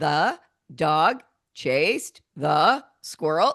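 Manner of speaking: slow, halting, pausing after every word. Speaker demonstrating a sentence read obeying a comma after every word, pausing after every word. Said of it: "read this sentence obeying the commas".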